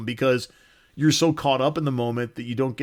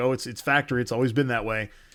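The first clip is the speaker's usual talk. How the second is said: ordinary talk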